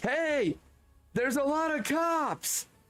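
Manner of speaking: put-on, very high, urgent yelling. Retelling pulling up beside a friend's car to warn them, retelling a yell. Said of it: "I'm like yelling like".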